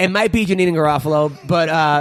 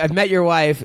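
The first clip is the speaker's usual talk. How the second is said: plain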